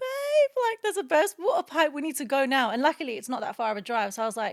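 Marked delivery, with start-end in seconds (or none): 0.0-2.7 frantic, urgent, high, raised panicked voice. Retelling own words to a partner after starting to panic: imitating own past panic. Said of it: "I started panicking and I was like".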